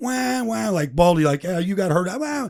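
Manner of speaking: high, whiny crybaby voice sobbing the words. Teammates in the cafeteria mock a player's whining on the field, mock whiny crying. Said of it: "imitating me whining on the field".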